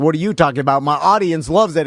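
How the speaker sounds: ordinary talk, nothing marked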